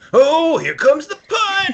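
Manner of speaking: worked-up, thrilled, climbing pitch. Imitating the football host calling a punt, imitating Siciliano super into it. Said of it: "super into it".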